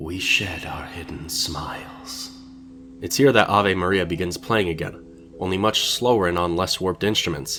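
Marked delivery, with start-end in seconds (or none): 0.0-2.3 spooky, hushed, slow ghost-story narrator voice. Reading out the message he gives us, in a ghostly narrator voice. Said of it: "I'll do my best ghostly narrator voice".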